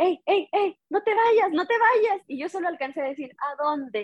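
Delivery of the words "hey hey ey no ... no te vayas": abrupt, sudden high-pitched shout. Retelling how someone suddenly started yelling at the speaker, imitating someone shouting. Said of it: "me empieza a gritar nada más de repente".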